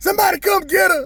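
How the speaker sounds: acted, very high, sobbing crying wail. Retelling a scene from when he was a boy, kids watching, imitating crying and hollering. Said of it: "I'm crying and hollering".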